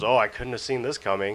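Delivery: put-on sarcastic, brushing-off tone. Retelling a debate moment, quoting Steven: imitating Steven's sarcastic remark. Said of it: "sarcastically goes".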